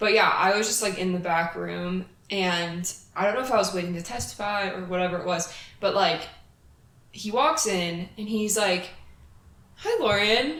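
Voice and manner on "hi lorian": sweet, cheerful, friendly voice. Retelling how a man walked into the back room and greeted her: mock-cheery greeting. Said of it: "all like, nice and cheery".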